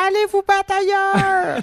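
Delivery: high, shrill shout at the top of the voice. Retelling how a man yelled at them from a window, retelling a shout. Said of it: "il nous criait".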